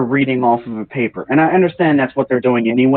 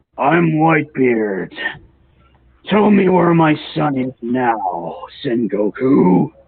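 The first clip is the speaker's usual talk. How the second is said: slow commanding voice, each word drawn out. Explaining how a character should sound, demonstrating a booming Whitebeard voice. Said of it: "I think ... a booming voice. Like".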